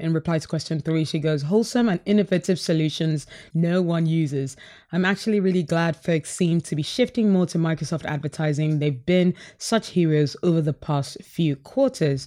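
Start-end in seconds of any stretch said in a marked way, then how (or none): none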